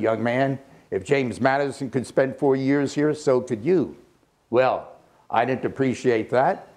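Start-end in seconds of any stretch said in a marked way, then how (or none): none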